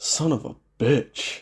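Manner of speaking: slow, drawn-out, each word spaced apart. Recalling a favourite reaction from an episode of Supernatural: imitating Dean. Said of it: "And he's like".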